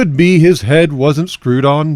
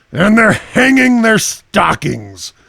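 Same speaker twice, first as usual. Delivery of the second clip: higher-pitched, sneering snarl; 6 semitones higher than usual. Narrating the Grinch looking down on the Whos below; snarling with a sneer. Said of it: "he snarled with a sneer".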